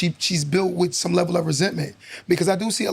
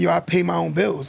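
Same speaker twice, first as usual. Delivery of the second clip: ordinary talk, nothing marked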